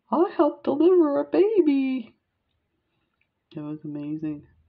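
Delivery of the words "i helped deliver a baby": play-acted, very high, swooping, giddy laughing burst. Reenacting her answer to the teacher's question, acting out laughing. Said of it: "bouncing and laughing".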